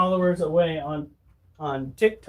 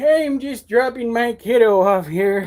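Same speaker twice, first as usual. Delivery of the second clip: put-on elderly man's voice, pitched up; 5 semitones higher, 4 dB louder than usual. Retelling talking at the gate while dropping off a kid, old man impression. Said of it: "gave my best old man impression".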